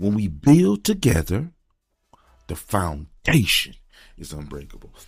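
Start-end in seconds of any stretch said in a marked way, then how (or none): 2.6-3.8 "foundation" stressed, much louder. Demonstrating how to deliver a line, with stress on foundation. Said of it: "Stress that word foundation".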